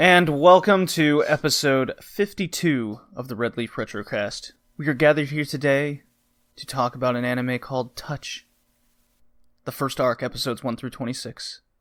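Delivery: mock solemn, funereal, somber delivery. A podcast host opens the episode, in a somber voice. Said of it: "I use a somber voice".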